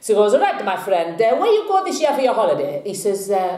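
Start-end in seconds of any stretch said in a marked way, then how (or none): 0.3-2.8 fast, rattled-off, bad, shaky Italian accent. Telling a joke, voicing the barber asking a customer, in a bad Italian accent. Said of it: "apologise for my Italian accent here".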